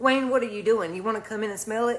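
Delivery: ordinary delivery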